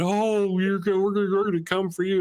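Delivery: weepy, mournful, tearful voice. Retelling a video of Miss Kirk on the internet: imitating Miss Kirk teary-eyed and sad. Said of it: "She's all teary-eyed and sad and going".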